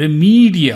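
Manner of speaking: remedial with middle E hit loud and slow. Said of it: "Look at the middle E is stressed".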